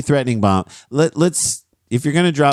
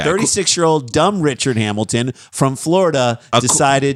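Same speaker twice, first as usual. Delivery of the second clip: ordinary talk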